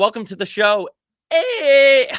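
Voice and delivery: voice breaking, very high, loud, drawn-out hey. A host welcoming the next caller to the show, voice cracking. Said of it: "my voice is cracked".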